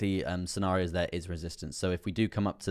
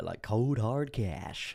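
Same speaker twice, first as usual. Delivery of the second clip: acted American-style delivery; 3 semitones higher, 3 dB quieter than usual. Reading out a comment, the speaker shows off an American accent. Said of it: "Love when you switch to an American accent".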